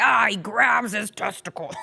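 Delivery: rough, creaky put-on monster voice. A father shows how he would talk to his son, in monster voice. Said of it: "Monster voice and all".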